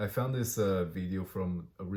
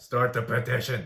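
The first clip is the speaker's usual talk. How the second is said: loud, pushy, egging-on urging; 4 semitones higher, 7 dB louder than usual. Imagining a guardian urging a kid to start a petition: acting out a parent or guardian. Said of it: "be going up to this kid like".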